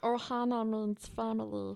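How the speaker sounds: voice-acted cartoon character voice. Doing an impression when asked to impersonate someone: Stitch voice. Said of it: "I can do Stitch".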